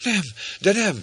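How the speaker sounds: screaming. Narrator voicing a woman's reply to a knight, screaming. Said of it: "sikoltotta Rebecca".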